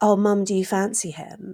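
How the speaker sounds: younger woman's voice in radio-advert style. Retelling a radio ad's dialogue: imitating a younger woman's voice. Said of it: "a younger woman's voice is like".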